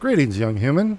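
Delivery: smooth, rich, silky elf voice. Voicing an elf shopkeeper greeting a customer: smooth, rich elf voice. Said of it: "The elf's voice is smooth as silk and rich as clotted cream".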